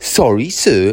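insolent, disrespectful, extremely rude tone. Acting out a child's rude answer to him; imitating Mary's rude tone. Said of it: "tone of voice, extremely rude".

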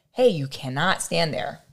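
plain

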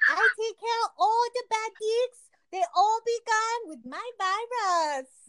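exaggerated fake Chinese accent, very high pitch. Told to do an impression of a Chinese spy, the speaker puts on a mock Chinese accent. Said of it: "Do an impression right now".

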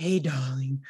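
put-on deep woman's voice. Recalling a woman people laughed at, imitating a woman's deep voice. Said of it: "they weren't expecting her voice to be so deep".

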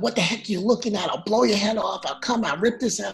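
acted, loud, threatening tough-cop yelling. Retelling how another cop pulled over in a car: imitating a cop yelling. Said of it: "starts yelling".

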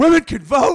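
shrill, very high and very loud shout. Mocking how misogynistic men reacted to women getting the vote: imitating misogynistic men. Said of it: "They're like".

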